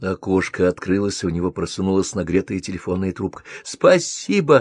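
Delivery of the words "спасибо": very high, shrill, called-out shout. A woman is handed a phone receiver through a window, shouting. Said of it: "закричала Мелисса".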